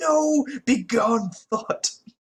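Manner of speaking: mock very high, drawn-out scream. Retelling a TV scene where Worf refuses a woman: imitating Worf screaming like an incel. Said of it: "screams like an incel and, like, goes".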